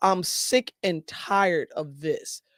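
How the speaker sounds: ordinary delivery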